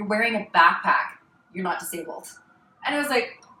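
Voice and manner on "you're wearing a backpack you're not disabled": normal talking voice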